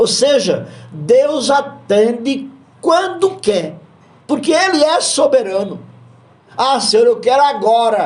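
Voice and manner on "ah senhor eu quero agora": pushy, impatient, demanding plea. Acting out a believer demanding an answer from god: acting an impatient demand. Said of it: "Calma, [name]".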